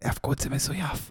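teasing, joking, very hushed whisper. Discussing a podcast feud, the speaker makes a joking aside: whispering. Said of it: "בלחישה אני אומר את זה".

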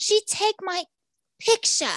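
high-pitched, yelled outburst. Retelling how a salon owner yelled at a police officer: imitating a man yelling. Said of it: "this guy starts yelling at the cop".

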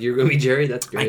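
ordinary talk

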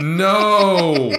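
very high, loud, anguished shout.

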